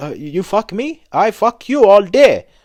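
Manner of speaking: loud, high-pitched, drawn-out broken English. Imitating how some people usually swear: broken English swearing. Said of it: "usually they're like".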